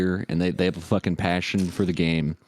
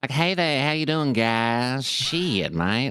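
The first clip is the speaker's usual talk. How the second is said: gross, off-putting character voice, high, slow drawl; 7 semitones higher than usual. Showing the voice of a creepy roleplay character called Dirty Dougie. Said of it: "He talks like this".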